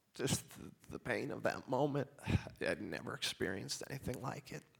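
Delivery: sad, quiet, emotional delivery. Speaker recalling the moment of hearing someone was gone, getting emotional. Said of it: "I'm sorry I'm getting all emotional on you".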